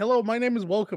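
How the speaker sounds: very loud, booming intro voice at full blast. Retelling a botched video intro: imitating Markiplier. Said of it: "he's just like".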